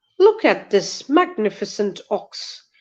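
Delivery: speaking British English. Giving a British English sample with a story line: British English accent. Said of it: "let me give you a sample of British English".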